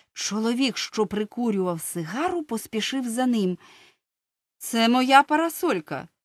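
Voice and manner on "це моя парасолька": firm, no-nonsense, raised voice. Narrator reads the man who followed Soapy out of the shop, firm. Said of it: "твердо сказав він".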